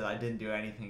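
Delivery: ordinary delivery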